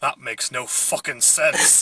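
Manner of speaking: grumbling mutter, as if to oneself. Retelling what another guy in the cinema said: imitating muttering under breath. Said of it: "just said under his breath".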